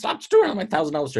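mock, high-pitched screaming outburst. Retelling how the wounded president yelled at the nurses: imitating someone screaming. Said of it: "he starts screaming at them".

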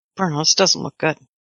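guarded, secretive, just-between-us confiding tone. Describing a man stepping in and shutting the door, speaking in a hushed tone. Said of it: "he's in a hushed tone".

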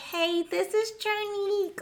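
very high, squeaky cartoon voice, slow. Recreating an old voicemail greeting voice when asked to, in a squeaky cartoonish voice. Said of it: "Okay, Mickey Mouse".

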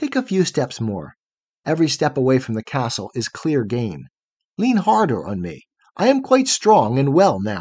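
ordinary delivery

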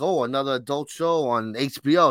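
ordinary talk, nothing marked

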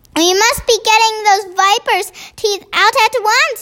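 high exclaiming cry. Seeing his second chance, he answers the yelling giant; crying out. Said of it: "he cried".

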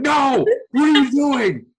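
shrieking, very high, loud screaming. Recapping a show, the speaker recalls reacting to Morgan: retelling a scream at the TV. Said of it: "I was like screaming at my TV".

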